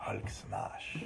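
breathy, whispered delivery. Doing the Hulk line on request: Antonio Banderas as the Hulk. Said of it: "give me Antonio Banderas as the Hulk".

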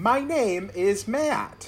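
exaggerated Eastern European accent. Introducing oneself on a film podcast, Borat-esque voice. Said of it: "That was Borat-esque".

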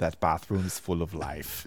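put-on German accent. Retelling what a german tourist said leaving a bathroom: german accent. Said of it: "use of the word life than in a German accent".

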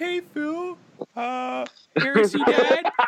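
fake nervous, high-pitched voice. Imitating a friend asking to play, voice going up three or four octaves. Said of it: "voice goes up, like, three or four octaves".

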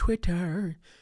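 high, strange laughing tone.

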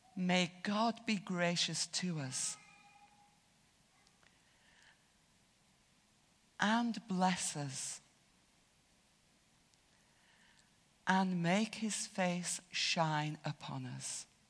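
slow, unhurried, pausing between phrases. Leading a group in a collective prayer, saying it slowly with pauses. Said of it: "I will say this slowly, just pausing".

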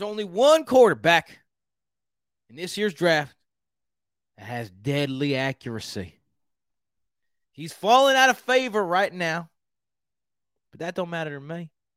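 fake, bad Texas accent from Houston. Making a mock draft pick for the Houston Texans, the speaker does a bad Houston accent. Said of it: "This is my Houston accent".

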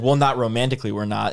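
ordinary delivery

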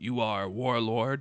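robotic, mechanical, machine-like voice. A narrator voices a figure the players hear addressing them, in a mechanical voice. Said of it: "you hear this mechanical voice".

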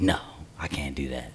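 hushed, quiet whisper.

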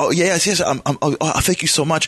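acted male voice breaking down. Retelling how a screaming man was handed a quarter by a lady, imitating him breaking down. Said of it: "And he like broke down".

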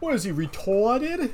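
put-on Boston accent, softened final a. Quoting Edward's first line from the film, in a Boston accent. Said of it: "he says it in like a Boston accent".

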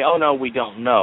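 ordinary talk

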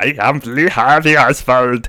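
put-on speaking with a German accent. Retelling what a man said after leaping into someone, in an accidental german accent. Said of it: "That's was German, isn't it?".

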